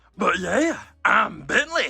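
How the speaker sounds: voice of a big cartoon guy. Showing the voice given to a toy character: Fat Albert voice. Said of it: "a Fat Albert voice?".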